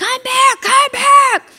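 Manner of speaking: very high, shrill, loud repeated hollering. Recalling a man yelling at a tormented sixteen-year-old girl, retelling a yell. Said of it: "yelling at her".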